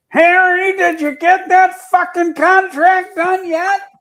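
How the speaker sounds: booming, very high, loud bellowing yell. Recalling a voice the whole building could hear: retelling a bellowing shout. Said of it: "you hear this bellowing voice".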